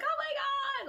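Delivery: thrilled, very high-pitched squealing cry. Retelling friends finding Harry after a scare, retelling excited happiness. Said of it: "we were all excited and happy".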